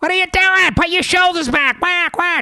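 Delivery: shrill, very high, loud screaming. Telling how a woman yelled at the speaker's wife, the speaker retells a woman yelling. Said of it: "this woman's like yelling at her".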